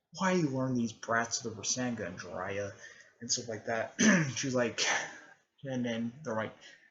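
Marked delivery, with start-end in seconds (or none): none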